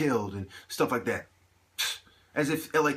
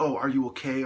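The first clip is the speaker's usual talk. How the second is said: imitated sarcastic tone. Retelling what people say when he acts oddly: imitating a sarcastic remark. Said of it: "or something sarcastic".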